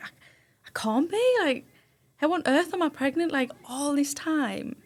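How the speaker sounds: tearful, high, drawn-out crying in disbelief. Retelling the moment of learning of the pregnancy, retelling own crying. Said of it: "I was crying".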